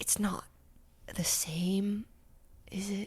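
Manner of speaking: breathy talking close in ear. Voicing Henrik, who scoots close to speak in someone's ear: breathe talking in ear. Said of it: "breathe talking, like, in your ear".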